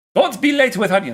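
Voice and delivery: put-on Romanian accent. Reading out a line requested in Romanian voice, with a put-on Romanian accent. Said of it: "In Romanian voice".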